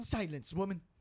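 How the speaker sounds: put-on cartoon baby voice. Trying out a Stewie voice when asked to do one: Stewie voice. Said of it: "Let's see if we can do Stewie".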